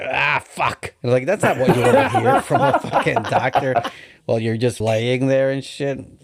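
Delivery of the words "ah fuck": mock-frustrated voice, higher. Retelling the doctor removing his wisdom teeth and cursing: imitating a frustrated doctor. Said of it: "hearing your fucking doctor get frustrated".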